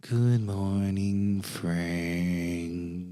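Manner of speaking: uncanny, strange monster voice, name drawn out. Voicing a monster that speaks to a player character in Diego's strange voice. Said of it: "you hear the strange voice of Diego go".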